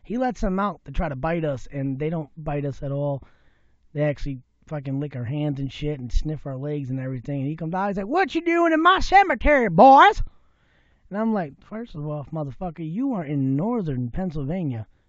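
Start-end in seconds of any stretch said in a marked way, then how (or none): 8.0-10.2 fake deep Southern accent, very high and loud. Retelling what a man said on finding the boys in his cemetery, Deep South accent. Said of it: "Where does this deep southern accent come from?".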